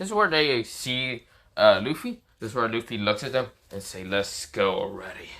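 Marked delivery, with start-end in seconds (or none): 4.0-5.3 low, dark, threatening, angry menacing tone. Retelling a scene where Luffy looks at the others, dark menacing tone. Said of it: "With a dark, menacing tone, pissed".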